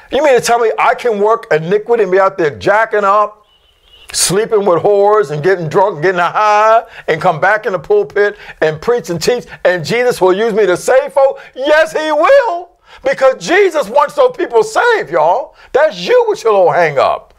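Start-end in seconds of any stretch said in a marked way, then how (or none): 11.5-17.2 high, shouting preacher-style sermon yelling. Preaching to the crowd, yelling. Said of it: "Excuse me for yelling at you".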